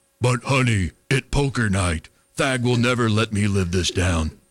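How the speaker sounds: very low, broken-English caveman voice. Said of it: "Jeep doing caveman impression".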